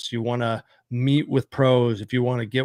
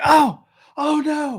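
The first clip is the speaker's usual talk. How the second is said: dismayed, very high outcry; 3 dB louder than usual. Describing watching the riders wreck on TV: acting out yelling at the TV. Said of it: "I am like yelling at my T V".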